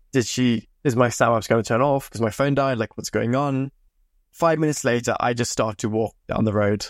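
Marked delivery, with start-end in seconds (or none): none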